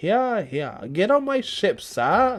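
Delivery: put-on old-timey British accent. Playfully putting words in someone's mouth; old-timey British accent. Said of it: "That's like early English settlement".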